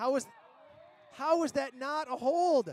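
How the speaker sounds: exasperated. An announcer on air questioning a hold call, sounding frustrated. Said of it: "I'm getting frustrated".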